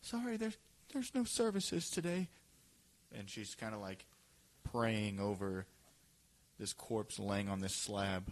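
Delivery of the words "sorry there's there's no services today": gentle, very high-pitched voice. Voicing a revered mother praying over a corpse to visitors, speaking softly. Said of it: "she just says like softly".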